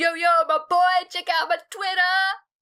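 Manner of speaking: very high-pitched, hyped-up vlogger-style voice. During a podcast recording, the speaker plays a YouTuber: hyped YouTuber voice. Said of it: "Are you a YouTuber or something?".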